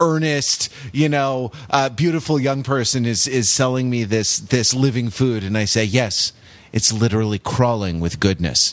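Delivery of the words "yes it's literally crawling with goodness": deadpan, flat delivery in a much lower voice. Retelling their answer to an earnest young seller, retelling a deadpan reply. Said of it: "I look deadpan".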